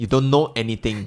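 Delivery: plain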